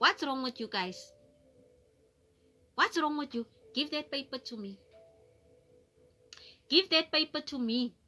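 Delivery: menacing, dangerous, threatening, demanding tone. Retelling what the grandmother said to the children: imitating grandma's menacing tone. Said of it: "I know the tone".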